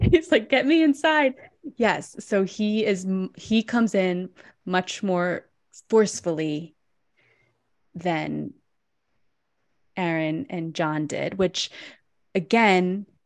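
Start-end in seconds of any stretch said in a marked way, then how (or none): 0.5-1.4 high, put-on breathless, panting voice. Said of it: "he's out of breath".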